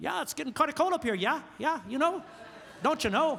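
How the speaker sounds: homespun North Dakota local accent. Joking about people up north, doing a Fargo accent. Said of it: "that's my best Fargo I could do".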